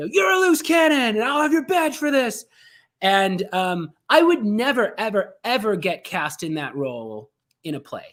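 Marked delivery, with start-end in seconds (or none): 0.1-2.5 very high, rapid-fire screaming. An actor imitates his boss character yelling cop clichés, imitating a screaming boss. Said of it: "He just screams like".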